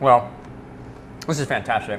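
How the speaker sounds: speaking through food while chewing. Tasting food on camera, talking while chewing. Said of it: "as I'm chewing and swallowing".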